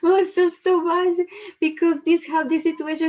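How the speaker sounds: fake sobbing. Acting out a coaching client who starts crying in a session: mock crying. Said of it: "start crying without stopping".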